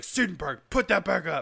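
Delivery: rough, high-pitched screaming. Retelling how an adult screamed at them at age twelve, retelling him screaming. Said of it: "he's like screaming at me like".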